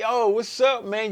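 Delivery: fake cheery, forced upbeat, drawn out, high and loud. Retelling greeting people while keeping a smile on: put-on cheerful greeting. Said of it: "keep a smile on my face".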